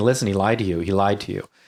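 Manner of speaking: ordinary delivery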